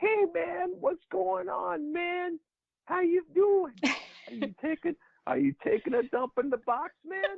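very high, drawn-out, one-of-a-kind distinctive voice. Remembering a late coach's greetings to players: imitating Kenny's voice. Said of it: "He had his own kind of voice".

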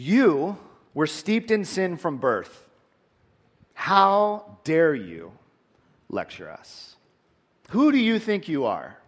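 slow, high, haughty, condescending, scolding tone. Retelling the Pharisees' reply to the healed man: imitating condescending Pharisees. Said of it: "Can you hear the condescension in their voice?".

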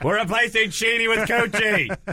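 high-pitched, loud mock scream. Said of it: "Les Moonves screaming into the camera".

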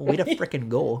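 Minnesotan accent. Celebrating winning the weekly bet, Minnesota accent. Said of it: "Why did I say that like my aunt in Minnesota?".

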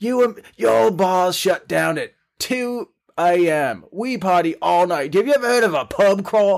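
put-on rowdy, hectoring holler, high and mild. Retelling how the Australian hosts yelled at them: imitating someone yelling. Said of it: "yelled at us".

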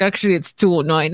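low, slow mutter under breath. Retelling what someone said before another could answer, under his breath. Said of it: "under his breath was like".

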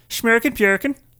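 mock Swedish accent, put on. Telling a story about approaching people from Sweden, doing a fake Swedish accent. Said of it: "Can I do a Swedish accent?".

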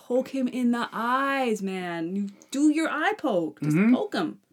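screaming, slow and deliberate. Retelling a moment while watching a match together: imitating own screaming. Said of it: "I'm just screaming, like".

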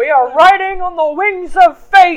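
put-on booming, loud, high salty old-sailor cry. Narrating a scene aboard a ship as the lights go out, in a salty old man voice. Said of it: "You sound like a salty old man".

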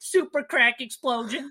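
put-on thick, very high-pitched New Jersey accent. Recounting a woman's lines from a movie, in a heavy jersey accent. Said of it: "Are you giving her a heavier Jersey accent?".

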